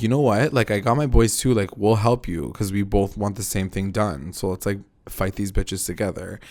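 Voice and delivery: ordinary talk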